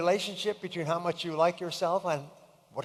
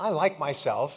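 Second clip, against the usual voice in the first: ordinary talk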